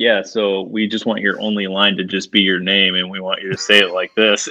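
usual speaking voice

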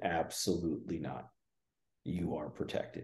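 very soft, hushed, calm and stern tone. Retelling the voice that answered in her channeling: imitating a calm, stern, confident voice. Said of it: "a very calm but stern and confident voice".

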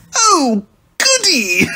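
very high, swooping, said through a laugh. Dr. Dead responds to his goon's report, laughing. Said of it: "Dead laughed".

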